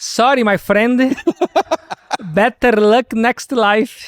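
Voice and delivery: put-on Indian accent, high pitched and slow. Quoting a phrase the way someone's indian friend says it, in indian accent. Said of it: "fica mais legal um sotaque indiano".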